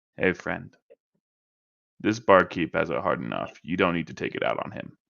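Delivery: quiet, hushed half-whispered word, close and soft. Cal leans in to Leonin, a hand on his shoulder, half-whispering. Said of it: "and whispers to him with a hand".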